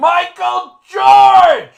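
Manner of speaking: shrill, booming yell, very high and very loud. Retelling being called by full name, imitating a dad yelling a name. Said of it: "it was a yell that they used my whole name".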